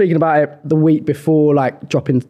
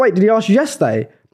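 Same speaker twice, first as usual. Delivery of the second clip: usual speaking voice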